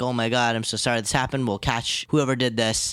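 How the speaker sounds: ordinary delivery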